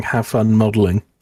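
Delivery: ordinary delivery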